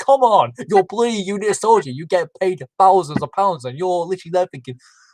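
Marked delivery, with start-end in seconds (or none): 0.0-3.6 mock fed-up, exasperated ranting shout. Retelling watching a unit soldier panic on TV: retelling own screaming at the TV. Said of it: "I'm screaming at the T V".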